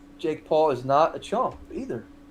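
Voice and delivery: ordinary talk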